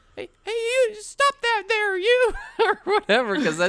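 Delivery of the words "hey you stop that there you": deliberately very high-pitched, loud put-on voice. Retelling a story of halfway asserting oneself, in a purposely higher voice. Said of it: "I'll purposely take my voice higher".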